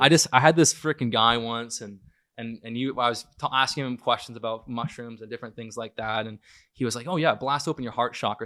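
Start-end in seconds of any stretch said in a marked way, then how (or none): 7.1-8.5 sarcastic, mocking mimicry of another's words. Speaker recalls a guy he asked about mushrooms, quoting him sarcastically. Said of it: "So I say it more sarcastically".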